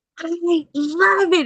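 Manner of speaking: very high, shrill, loud scream at the top of the lungs. Retelling her mother's reaction to the store name: imitating her scream. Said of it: "she's like screaming to the top of her".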